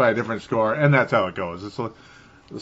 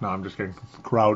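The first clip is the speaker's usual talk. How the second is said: ordinary delivery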